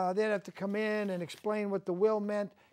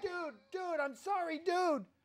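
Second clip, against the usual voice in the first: high, soft, desperate begging plea. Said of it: "He was begging".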